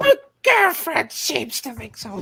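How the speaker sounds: creature voice. Reading a question aloud to the others: Smeagol impression. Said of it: "That's my Smeagol impression".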